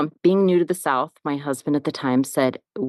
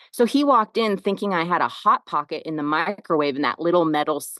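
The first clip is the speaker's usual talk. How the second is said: plain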